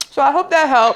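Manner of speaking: talking with full mouth. Eating crab legs while giving tips to y'all, talking with a full mouth. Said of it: "Let me not try to talk with a full mouth".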